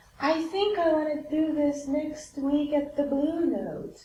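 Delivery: extremely slow, drawn-out speech. Recalling a man who stayed in their living room, imitating his very slow way of talking. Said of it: "He talks like this very slowly".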